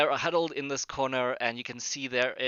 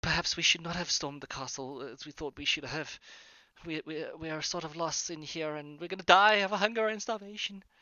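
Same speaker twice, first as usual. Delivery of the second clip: frightened, fearful voices; 4 semitones higher than usual. Narrating a hallway scene, voicing figures the players overhear, in scared voices. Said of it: "you can hear these scared voices saying".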